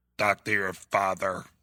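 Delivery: stiff robotic put-on voice. Attempting the Hector voice for a written line: Hector voice. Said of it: "I can't do the Hector voice as well as you can. ... It sounds more like a shitty robot".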